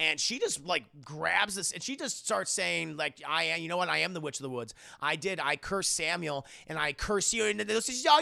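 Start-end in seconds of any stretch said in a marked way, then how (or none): none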